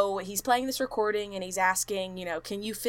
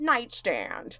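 plain, dull device readout machine voice; 3 semitones higher than usual. Retelling what a ghost-detection device says: imitating a basic device voice. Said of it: "in just, like, a basic voice".

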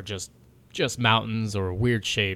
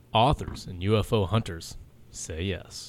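put-on, slow, dramatic documentary narrator voice. Group chat about a long-frozen continent, in an Ancient Aliens voice. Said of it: "In my ancient alien voice".

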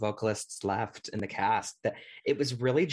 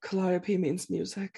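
put-on whisper, higher pitch; 8 semitones higher than usual. Quoting a TV scene where Callie whispers her line: imitating Callie's whisper. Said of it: "she whispers, like".

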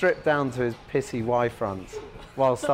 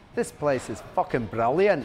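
put-on Belfast-sounding Northern Irish accent. Retell the actor getting pissed and putting on an accent: Kiefer Sutherland's Glaswegian, coming out Belfast. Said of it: "definitely Belfast coming out".

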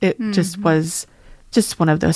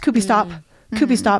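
quick, rushed mock child voice, much higher; 4 semitones higher than usual. Speaker imitates how a child used to say it: imitating him saying it fast. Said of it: "because he would say it so fast".

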